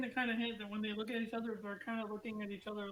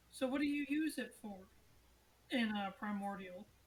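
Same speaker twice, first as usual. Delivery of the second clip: tiny, small little voice. Voicing a young masked figure asking a question: little voice. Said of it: "speaks up in a little voice".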